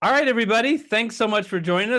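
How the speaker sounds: voice cracking. Wrapping up the session and thanking everyone for joining, voice cracking. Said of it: "My voice is cracking".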